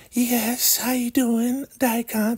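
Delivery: very high, slow, sugary sweet-talking voice. Retelling a show scene, quoting her greeting Daikon: imitating soft sweet talk. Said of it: "Talking all soft and sweet".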